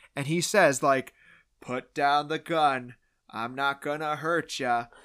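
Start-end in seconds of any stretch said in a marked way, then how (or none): 1.6-4.8 poorly acted movie cowboy voice. Retelling a movie line done as a below average John Wayne impression. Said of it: "does a below average John Wayne impression".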